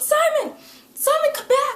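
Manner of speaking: high, loud, desperate yell. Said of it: "she's yelling in this episode".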